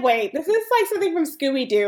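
mock pissed-off, high, irritated exclamation. Retelling own reaction to a film's twist ending: retelling own irritated reaction. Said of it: "and I'm pissed".

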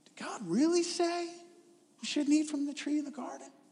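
charming, sweet-talking voice, pitched slightly high. Speaker retells the serpent speaking to Eve in the garden: Satan's mock-charming voice. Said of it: "he said in his most charming voice".

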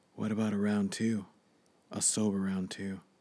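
whispering. Reading a story aloud, a character speaks into someone's ear: whispering. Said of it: "came to whisper in my ear again".

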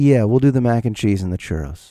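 grave, defeated, very serious deadpan tone. Retelling an order, quoting their own reply, in a very serious tone. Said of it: "Like in a very serious tone".

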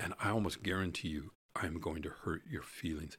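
ordinary talk

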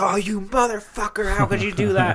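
mock, shrill, very high, laughing scream. Retelling friends playing a game on a couch: imitating someone screaming. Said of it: "screaming at each other and laughing and being like".

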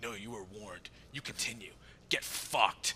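angry, hostile, dismissive tone. Retelling what an angry acquaintance said, imitating his angry voice. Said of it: "I like the voice".

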